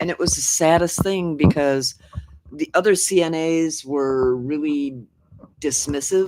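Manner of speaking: ordinary delivery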